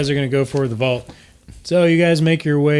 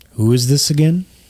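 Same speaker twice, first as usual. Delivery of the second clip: deep, low-pitched put-on voice. Narrating a scene, voicing a familiar figure answering a call, deep voice. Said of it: "a familiar deep voice say".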